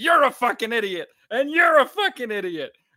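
shrill, very high, loud screaming rant. Retelling the host kicking down the door, imitating someone screaming. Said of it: "he's just like screaming at people".

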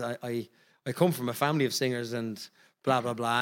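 ordinary delivery

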